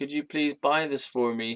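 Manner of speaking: put-on slight American accent. Retelling own past request to people in a mall: slight american accent. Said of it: "I had a bit of an American accent".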